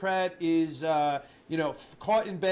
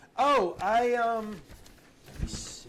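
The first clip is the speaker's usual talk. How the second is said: mocking put-on impression voice, pitched higher; 5 semitones higher than usual. Mocking a press secretary fumbling a breakfast question: imitating the press secretary. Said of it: "here's my impression of her".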